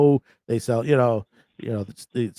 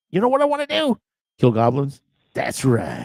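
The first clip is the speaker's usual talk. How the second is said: worst-ever cartoon voice, full of swoops; 3 semitones higher than usual. Describing an abridged parody show, quoting its hero in the worst voice ever. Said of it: "the worst voice ever".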